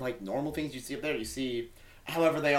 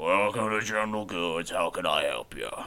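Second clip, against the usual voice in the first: very deep, low orc shopkeeper voice; 8 semitones lower than usual. Voicing a horned, orcish-looking man behind a shop counter greeting customers: voicing an orcish shopkeeper. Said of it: "it looks a lot like an orcish man".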